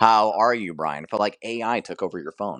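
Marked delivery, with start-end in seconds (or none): 0.0-1.0 mock robot-like delivery. Teasing a friend about how he answered, mimicking a robotic greeting. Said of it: "that felt so robotic".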